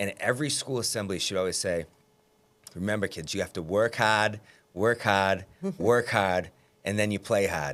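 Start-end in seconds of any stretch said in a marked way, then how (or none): 2.7-7.7 put-on thick Boston accent, laid on. Quoting an elementary school principal at assemblies, imitating Patty O'Leary's thick accent. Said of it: "she had a thick accent".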